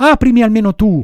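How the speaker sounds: high, loud, sobbing, tearful shout. Pinocchio begs the girl at the window to let him in; shouting, crying and pleading. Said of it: "gridò Pinocchio, piangendo e raccomandandosi".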